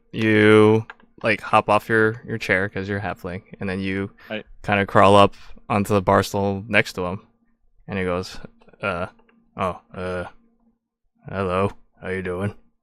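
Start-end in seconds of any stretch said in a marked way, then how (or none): 8.8-12.5 put-on hesitant, stammering older man voice, much lower, quieter. In a tabletop game, the game master voices an older worker greeting a halfling: hesitant older man voice. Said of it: "and he is an older man, and it he's wearing like uh this like blue jumpsuit, / and he is an older man, and it he's wearing like uh this like blue jumpsuit, and it, he looks like an, an H V A C worker".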